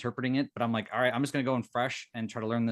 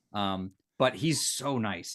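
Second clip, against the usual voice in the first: usual speaking voice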